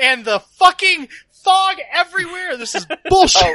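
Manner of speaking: exasperated shouting. Ranting to the other players out of character: frustrated yelling. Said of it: "That was K R yelling".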